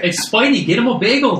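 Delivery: put-on Canadian accent that sounds Irish. Joking about Spidey getting a bagel: put-on Canadian accent sounding Irish. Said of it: "That was Irish".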